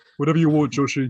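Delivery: put-on deep British man voice. Retelling what George said to Joshie, in George's deep burly British voice. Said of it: "You sound like a fucking host of".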